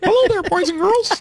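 very high, squeaky cartoon voice. After another speaker says the caller sounds like her, doing a Minnie Mouse voice. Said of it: "She sounds like Minnie Mouse".

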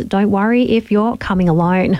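ordinary talk

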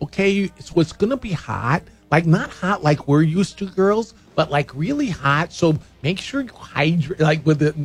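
put-on Midwestern lady accent. A speaker imitates the chapter advisor from a call, in a midwestern lady accent. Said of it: "listen to [name] do the Midwestern lady chapter advisor".

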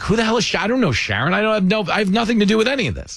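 high, rushed, flustered voice.

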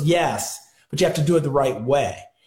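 plain

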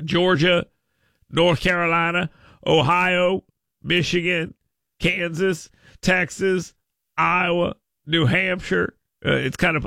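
odd put-on accent, vowels stretched, Ohio drawn out. Speaker reading out a list of states, in a put-on accent. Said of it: "I don't know why I'm speaking in that accent".

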